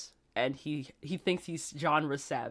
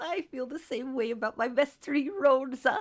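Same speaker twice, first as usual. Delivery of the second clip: very high-pitched, loud cartoon voice; 10 semitones higher, 5 dB louder than usual. Echoing the other speaker's praise of a bestie: Goofy Gophers voice. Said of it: "I'm talking like that fucking gopher now".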